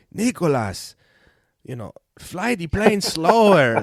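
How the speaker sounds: put-on Latin accent, slow and high. Quoting his dad, his flying instructor, correcting him: dad's Latin accent. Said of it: "he's Latin, and so he has this accent".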